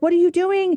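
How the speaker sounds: high-pitched, sharp, mild mock yell. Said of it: "Brian yells at me all the time".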